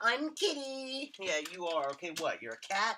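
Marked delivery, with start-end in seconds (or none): 0.0-1.1 put-on very high, squeaky, cutesy girl voice. Mocking a girl who loves being called Kitty: imitating Kitty, high pitch. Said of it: "High pitch".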